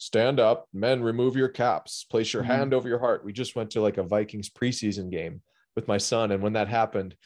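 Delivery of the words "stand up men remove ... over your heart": announcer-style stadium PA proclamation. Imitating the speaker before a football game: imitating a big booming announcer voice. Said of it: "the big booming voice on the speaker".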